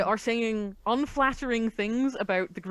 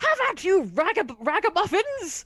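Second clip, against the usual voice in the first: very high, drawn-out, swooping battle shout; 10 semitones higher, 4 dB louder than usual. Attempting a character's voice that shouts as if at someone in combat. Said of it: "I'm going to attempt to do the voice. It seems to be shouting at somebody in combat".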